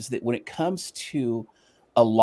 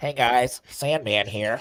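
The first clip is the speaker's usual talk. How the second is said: put-on nasal voice. Redoing the greeting a second way: nasal Sandman impression. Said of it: "I did hear he talks very nasally".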